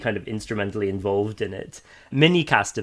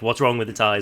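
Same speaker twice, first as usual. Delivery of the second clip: ordinary talk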